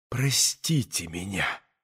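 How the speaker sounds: low, soft moan, almost a half-whisper. Narrator reads one woman's words to another at the door, moaning almost in a half-whisper. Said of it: "почти шепотом, простонала ей".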